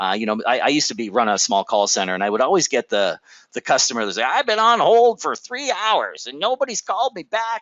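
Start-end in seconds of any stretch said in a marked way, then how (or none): 4.2-7.6 put-on complaining old man voice, very high, grumbling. Former call center runner quoting a customer on hold: put-on complaining old man voice. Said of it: "that's my complaining old man voice".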